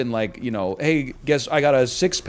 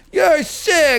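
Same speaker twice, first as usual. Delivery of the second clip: very high-pitched, loud, belted comedian voice; 6 dB louder than usual. Saying a line he always says in Adam Sandler voice. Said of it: "I always say you're sick in Adam Sandler's voice".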